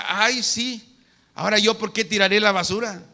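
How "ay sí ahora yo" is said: plain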